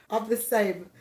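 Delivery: ordinary delivery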